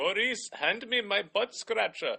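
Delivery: high, loud cartoon lemur king voice. Recalling how the cartoon king talked to Maurice, in King Julien voice. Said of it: "he sounded like this".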